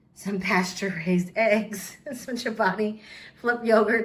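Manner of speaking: words spoken through stifled giggling laughter. Showing a grocery haul while the husband messes with her: laughing while talking. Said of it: "I'm trying to do this without laughing".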